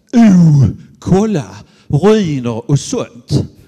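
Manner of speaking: put-on southern Swedish Skåne accent. Retelling a man overheard beside an archaeological dig, in a broad Skåne accent. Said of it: "på klingande skånska säga".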